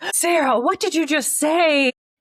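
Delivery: appalled, mortified, very loud shriek. Retelling a friend's mom hearing a swear in the van: imitating a mortified mom.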